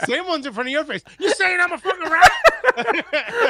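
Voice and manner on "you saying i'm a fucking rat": loud, high, swooping tough-guy voice, every word stretched. Told there is one in front of his face, snapping back: Joe Pesci voice. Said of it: "why do you sound like Joe Pesci".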